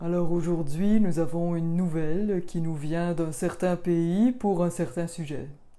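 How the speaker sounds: sombre, dark, deep radio announcer voice. Imitating radio hosts who once spoke in a sombre way: dark radio-host voice. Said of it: "les animateurs parlaient avec une voix plutôt sombre".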